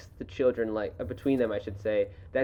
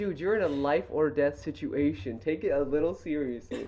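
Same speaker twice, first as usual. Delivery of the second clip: ordinary talk, nothing marked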